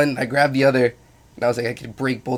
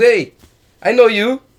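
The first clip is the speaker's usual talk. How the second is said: slow, shrill, high, loud, booming broken English; 10 semitones higher, 9 dB louder than usual. Retelling a friend's beach pickup line: imitating a friend's broken english. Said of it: "his English is very broken".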